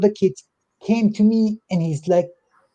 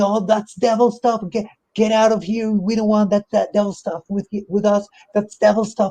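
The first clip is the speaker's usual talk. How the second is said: put-on distressed, upset yelling; 2 semitones higher than usual. Retelling how a mother grabbed her kid, imitating her yelling. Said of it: "she started yelling".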